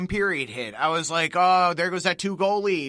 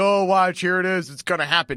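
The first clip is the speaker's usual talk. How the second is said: mock sarcastic tone; 4 dB louder than usual. Recalling what they said before leaving work about the Flyers game; retelling a sarcastic remark.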